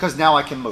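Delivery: plain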